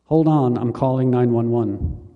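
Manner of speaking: plain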